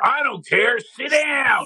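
very high, drawn-out heckling crowd voice. Retelling what a fan behind them shouted at a game: imitating a heckling Philly fan. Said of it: "a Philadelphia behind him goes".

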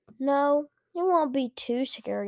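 ordinary delivery, nothing marked

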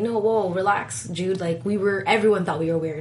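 ordinary talk, nothing marked

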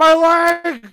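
very high, very loud, drawn-out cartoon shriek. Joking about someone hit by a stray crossbow bolt: SpongeBob "my leg" scream. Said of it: "It was like SpongeBob".

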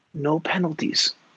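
acted whispering. Recalling what a player whispered to him while lined up: retelling a whisper. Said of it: "whispers to me".

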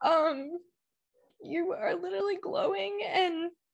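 getting emotional, choked up. Complimenting the other speaker on their glow, getting emotional. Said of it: "I need to get my shit together".

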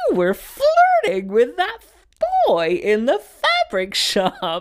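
very high, shrill, sing-song, swooping mom voice. Retelling what a mother said after leaving a shop: first imitation of mom. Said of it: "my mom turns to me the minute we get out and goes".

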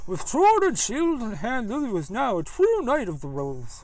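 put-on old grandpa voice. Playing the grandpa narrating Lily's story, in the grandpa's voice. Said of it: "doing the grandpa's voice".

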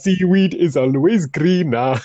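attempted Jamaican accent, put-on. Having offered to do it, speaking a line in a put-on Jamaican accent. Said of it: "I can put on my Jamaican accent".

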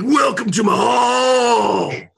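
very loud, high, slow, drawn-out bellow. Voicing the Jarl standing up in his feasting hall: Hulk Hogan voice. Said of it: "I've got him played by Hulk Hogan".

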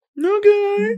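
mock girly voice, squealed very high.

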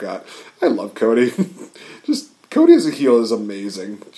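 ordinary delivery

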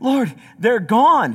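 loud, winded, breathless, gasping voice. Telling a joke where Peter runs back to the Lord, out of breath. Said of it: "he's out of breath".

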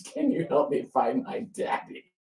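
put-on little girl voice, crying, pleading, voice swooping. Retelling the story, the speaker quotes a little girl looking for her daddy, imitating her crying. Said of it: "She's crying".

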